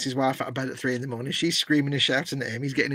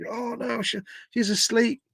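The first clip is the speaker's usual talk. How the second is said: put-on drunk voice, higher and much slower; 9 semitones higher than usual. Retelling a customer who hadn't paid his tv bill, imitating him drunk. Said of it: "he's all drunk".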